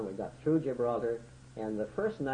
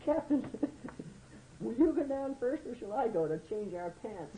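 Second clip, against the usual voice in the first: thrilled, squeaky falsetto, very high; 13 semitones higher than usual. A captain retells what his signalman said to him, imitating Art Howard's excited falsetto. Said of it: "with a high falsetto voice and excitement".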